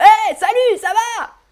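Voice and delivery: high shout at full volume, top of the voice. Illustrating speaking while shouting in a french grammar lesson: shouting. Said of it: "Ou je parle en criant".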